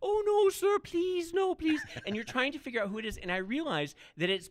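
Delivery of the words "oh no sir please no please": cute, squeaky voice, very high and loud. Describing a movie's talking ape and imitating how it talks: Piglet voice. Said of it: "he sort of talks like this".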